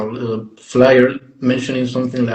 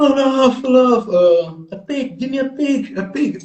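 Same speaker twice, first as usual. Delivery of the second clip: mock drunk scream, much higher, slower; 13 semitones higher than usual. Retelling how a wasted guy burst backstage, imitating a drunk screaming. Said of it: "entered the backstage screaming like".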